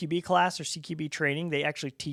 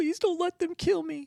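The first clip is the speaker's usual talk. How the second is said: mock very high, craven, cowardly pleading tone; 13 semitones higher than usual. Retelling how a man acted out the quote he wanted, mock-cowardly pleading. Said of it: "very cowardly".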